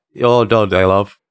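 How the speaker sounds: terrible fake British accent. Two podcast hosts joke around in a terrible fake British accent. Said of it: "They do love a good British accent".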